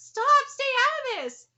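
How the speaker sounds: shrill, very high, loud shouting. A game character cuts someone off, yelling. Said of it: "Sorry for yelling".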